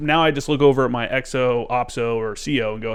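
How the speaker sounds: ordinary talk, nothing marked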